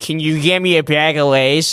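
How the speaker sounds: slow, exaggerated, over-the-top Boston accent. Repeating his request back to make him sound like the biggest boston douchebag. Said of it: "make him sound like the biggest like Boston douchebag".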